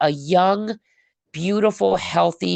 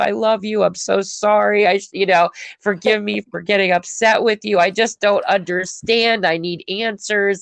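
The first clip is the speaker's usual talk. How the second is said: put-on tearful voice; 3 semitones higher than usual. The speaker acts out their later apology to him, imitating their own crying. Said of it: "I'll be like crying later".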